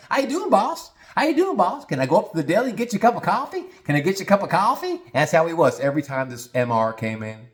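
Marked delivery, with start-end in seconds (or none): 0.1-5.0 very high, eager-to-please voice. Show how he greeted the boss every time the M R came in, imitating [name]. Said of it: "This is exactly how I sounded".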